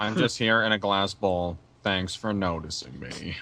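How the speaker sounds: low, dull, flat monotone drone. Speaker voices Goldie, a character in a glass bowl; Goldie voice. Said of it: "you do an actually pretty good voice of Goldie".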